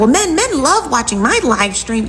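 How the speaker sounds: put-on high, childlike voice like a twelve-year-old. Quoting the woman again after her fallout with Kev: imitating Billy's twelve-year-old voice. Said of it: "'cause you sound like a twelve-year-old".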